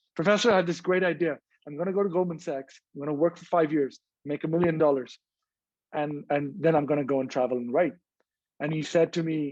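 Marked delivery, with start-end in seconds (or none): none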